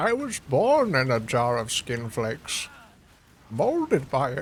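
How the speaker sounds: voice through a cupped hand, pitch swinging. Joking during a game in a Bane voice. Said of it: "everybody can do Bane".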